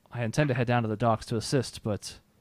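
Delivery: ordinary delivery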